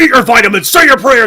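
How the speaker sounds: loud, high-pitched, spat-out character voice. Retelling a friend's impression in the car: Hulk Hogan impression. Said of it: "this was Hulk Hogan talking".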